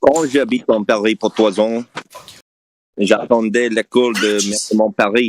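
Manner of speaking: American speaker's put-on Parisian French accent. Speaking french to show off an accent: parisian french accent. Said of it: "it's Parisian French accent".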